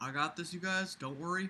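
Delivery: put-on hushed, soft voice with a Southern accent. Acting out President Obama pulling out his checkbook, as Obama with a Southern accent. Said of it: "I don't know why I just made him Southern".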